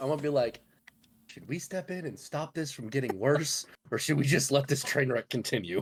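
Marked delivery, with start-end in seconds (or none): 1.3-5.8 whispered, quiet. Leaning over to two companions during an awkward exchange: whispering. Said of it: "I'm gonna lean over and whisper to the two dudes".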